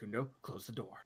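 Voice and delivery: very quiet, hushed half-whisper. Voicing a character urging another to shut a door: half-whispering in character. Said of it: "Dash just whispers".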